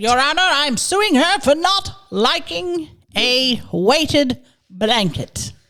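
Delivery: put-on English accent. Joking that they are suing another speaker in court: put-on English accent. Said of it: "Don't need you to do the little French voice".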